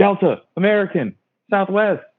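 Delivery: put-on very high, eager kids' screaming voices. Retelling how the young people call out airline names: imitating kids screaming. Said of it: "they just start screaming".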